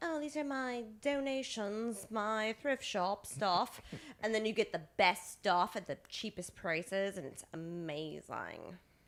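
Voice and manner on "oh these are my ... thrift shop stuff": put-on, fake British accent. Speaker imitates rich donors at thrift shops, in a put-on british accent. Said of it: "why are rich people in San Francisco British?".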